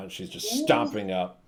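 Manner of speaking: ordinary delivery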